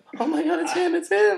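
very high, shrill, starstruck gushing squeal. Imagining meeting Arnold Schwarzenegger, the speaker is acting out fanboying out. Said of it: "I would probably like just fanboy out".

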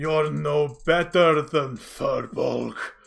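contemptuous, rough, sneering monster voice. Voicing the creature as it swings its spear down: sneering creature voice. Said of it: "sneers at him".

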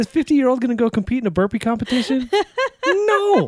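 mock rant, high, loud and exasperated.

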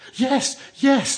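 eager, very high-pitched voice. Narrator reads the group answering the village girl, eager. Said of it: "they answered eagerly".

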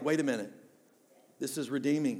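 ordinary talk, nothing marked

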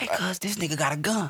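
soft, hushed half-whisper with no voice. Showing how you would half-whisper to your homie, in a half-whisper. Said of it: "I'm not whispering that".

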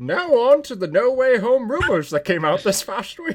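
cartoon narrator announcer voice. Moving the podcast on to the next topic, in a Clone Wars announcer voice. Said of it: "You sound like the announcer".

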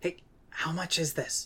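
quiet, hushed half-whisper, kind of whispered. A player in a game, speaking in character to Smirn Say: kind of a whisper. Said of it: "kind of whisper".

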